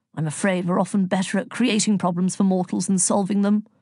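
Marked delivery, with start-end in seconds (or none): none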